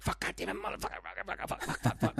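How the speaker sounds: whispered string of muttered curses. Acting out a king who stutters, swearing under his breath. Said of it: "under his breath".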